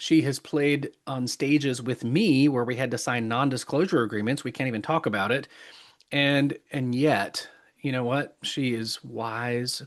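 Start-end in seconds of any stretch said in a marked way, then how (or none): 8.4-9.8 slow, soft, choked-up voice catching in throat. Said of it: "I get choked up here".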